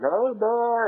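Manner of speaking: mock, high-pitched hollering. Speaker retells a cashier wife calling to her husband from behind the counter; retelling a hollered call. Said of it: "she hollers at him".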